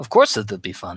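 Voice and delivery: put-on big, thick, heavy, deep Russian accent. Roleplaying as Zuri, answering a training partner, in a thick deep Russian accent. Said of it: "big, thick, deep Russian accent of Zuri".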